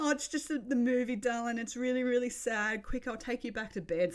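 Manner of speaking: put-on crying while speaking. Retelling comforting Mackenzie, who asked what was wrong, while retelling crying while speaking. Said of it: "And I'm crying".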